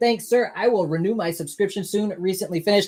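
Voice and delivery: ordinary talk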